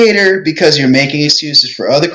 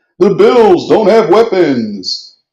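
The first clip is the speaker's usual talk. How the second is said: put-on sports-show announcer voice; 4 semitones higher than usual.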